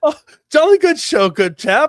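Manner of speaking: high and loud, regal-sounding voice. Imagining what the Queen of England would say: imitating the Queen of England. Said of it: "what would the dirty talk while she's doing that sound that she'd be like".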